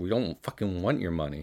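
ordinary talk

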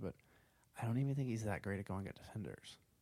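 hushed, low volume. Speaker shares a frank opinion about a player; saying it really quietly. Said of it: "I'm saying this really quietly".

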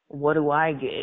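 low, sultry, seductive put-on voice. Retelling a story about a massage, quoting Tom in his sultry voice. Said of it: "in his sultry voice".

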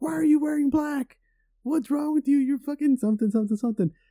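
very high, shrill, accusing yelling. Acting out a woman in a wheelchair yelling at the speaker, retelling a yell. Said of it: "she starts yelling at me like right off the bat".

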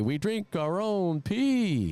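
very slow, stretched-out calling voice. Mimicking how a call in the game sounds; mimicking a slow drawn-out call. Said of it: "They say it so slow".

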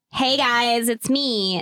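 put-on full, slow, drawn-out Valley Girl voice. Speaker greets the listeners after offering to go full Valley Girl: Valley Girl voice. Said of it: "Should I go full Valley Girl?".

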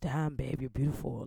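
put-on London accent. Speaker retelling what a man said on coming up, imitating a London accent. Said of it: "with his London accent".

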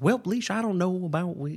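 put-on old man Texas accent. Describing an old Texas guy's adorable accent: imitating Allie's dad's Texas accent. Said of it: "like, Texas guy".

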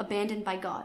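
ordinary delivery

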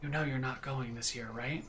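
hushed, barely audible, very quiet half-whisper. Voicing a character alone in a room with the player: half-whispering quietly. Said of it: "whispers quietly".

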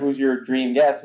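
ordinary delivery

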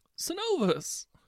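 very high, loud panicked cry. A character crying out to the protagonist, just punched in the gut: panicked cry. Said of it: "now sounding panicked".

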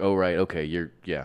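ordinary talk

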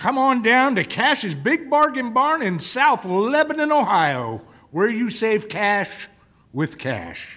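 high, slow southern preacher-style drawl. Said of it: "with his southern drawl and his preacher accent".

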